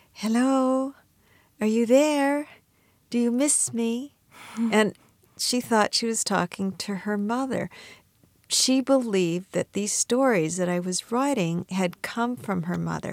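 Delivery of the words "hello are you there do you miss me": put-on coy, timid, shy, high little-girl voice. Retelling how she spoke to the computer, in a put-on shy little girl voice. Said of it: "in a very shy little girl voice".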